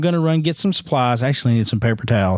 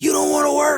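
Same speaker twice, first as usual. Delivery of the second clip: very high, shrill screaming. Retelling a man screaming and pointing at him, imitating a man screaming. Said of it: "And he starts screaming at me".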